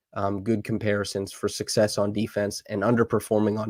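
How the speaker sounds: usual speaking voice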